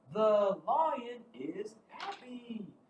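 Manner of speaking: excited, thrilled, high-pitched and very slow. Showing learners how to read a sentence with an exclamation mark: excited. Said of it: "It's exciting".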